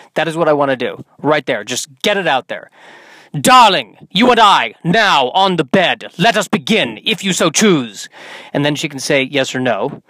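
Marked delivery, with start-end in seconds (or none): 3.4-8.1 put-on, bad Shakespearean accent. Speaker acts out approaching a woman in a bad shakespearean accent. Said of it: "speak to her in a bad Shakespearean accent".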